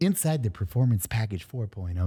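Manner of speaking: weird quiet put-on voice. Reading an ad as Ryan Reynolds: Ryan Reynolds voice. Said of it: "this is my Ryan Reynolds face".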